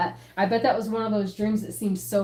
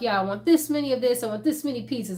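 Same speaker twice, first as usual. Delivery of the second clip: put-on New York accent; 3 semitones higher than usual. Retelling a kid ordering lots of food in a pretend game: imitating a New York accent. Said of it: "he had some kind of accent".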